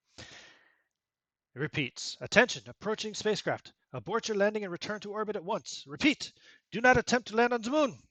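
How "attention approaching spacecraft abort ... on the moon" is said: put-on slight French accent, very high and fast. Voicing a repeating warning message to an approaching spacecraft: slight French accent. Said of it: "with a touch of a tinge of a French accent say".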